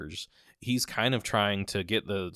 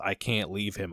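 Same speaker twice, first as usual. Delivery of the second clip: put-on crying, sobbing voice. Retelling a film scene where a grieving mother begs at the casket: imitating a crying mother. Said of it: "crying and losing her mind".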